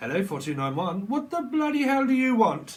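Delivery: put-on high-pitched, shrill, loud, grumpy cantankerous old man voice. Imitating a British comedy show character answering the phone, in a grumpy old Victor Meldrew voice. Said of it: "like a really grumpy old man".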